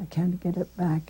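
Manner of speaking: ordinary delivery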